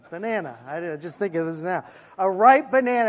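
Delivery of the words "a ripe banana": ripe said higher and louder with punch. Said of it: "as I may look like right now".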